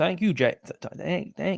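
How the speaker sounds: soft, clumsy, bad South African accent. Thanking a video maker, sending love from South Africa, trying the accent badly. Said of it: "Shall I try the accent?".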